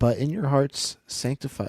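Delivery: voice breaking mid-line, cracking and jumping high. Reading a favorite Bible verse aloud to listeners, voice cracks. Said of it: "Ooh, voice crack".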